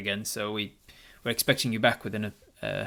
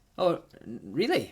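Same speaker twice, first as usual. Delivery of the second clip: put-on spoken in a Scottish accent; 5 semitones higher than usual. Voicing the shopkeeper Franklin answering a customer: Franklin with Scottish voice. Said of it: "am I giving Franklin a Scottish voice there".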